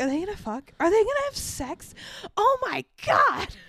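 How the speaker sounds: play-acted, high, disgusted, appalled, grossed-out exclamations. Retelling reacting to a scene on tv: retelling being grossed out. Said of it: "I was so grossed out".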